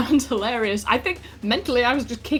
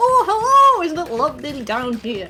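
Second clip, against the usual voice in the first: very cheery, bright, loud, sing-song voice; 4 semitones higher, 5 dB louder than usual. Voicing what the players hear as they arrive: very cheery voice. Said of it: "You just hear a sort of very cheery".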